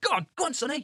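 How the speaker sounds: cheering, pitched high. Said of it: "you have to go".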